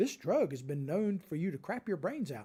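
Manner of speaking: play-acted sweet, very pleasant commercial narrator voice. Mocking pharmaceutical commercials announcing a drug's side effects: imitating a very pleasant voice. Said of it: "in a very pleasant voice comes out and says".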